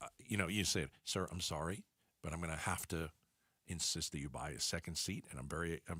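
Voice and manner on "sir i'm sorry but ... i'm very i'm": low, hushed, discreet and courteous tone. Showing how to tell a passenger he must buy a second seat, speaking quietly. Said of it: "Now I don't have to be quiet".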